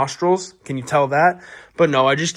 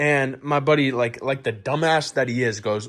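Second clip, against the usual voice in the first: usual speaking voice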